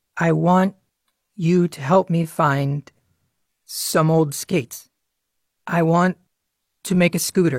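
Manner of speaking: speaking slowly and carefully. Speaker retries a request after being told to take it slower, slow careful speech. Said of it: "That time you said it much better".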